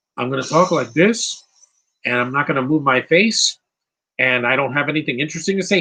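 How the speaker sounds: usual speaking voice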